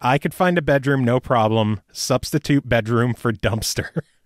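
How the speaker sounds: ordinary delivery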